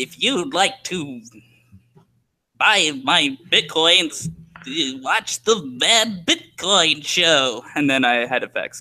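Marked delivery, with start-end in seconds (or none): 0.0-7.6 slow, villainous bad-guy voice. Trying to recall the bad guy voice he once used, bad guy voice. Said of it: "What was the bad guy voice?".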